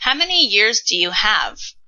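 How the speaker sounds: ordinary talk, nothing marked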